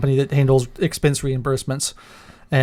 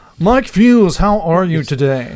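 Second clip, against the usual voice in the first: put-on slow, raised jazz radio DJ voice; 4 semitones higher, 5 dB louder than usual. On the mic, announcing he'll do the whole show in this put-on voice. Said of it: "I'm gonna do the whole show in this voice. / Is this a jazz station?".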